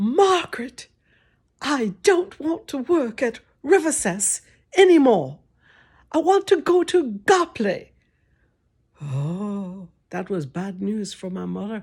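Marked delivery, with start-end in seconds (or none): 0.0-7.9 put-on proper, convincing British accent, pitched up. Quoting what a lady once told the speaker's mother, british accent. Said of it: "She said in her good British accent".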